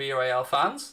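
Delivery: plain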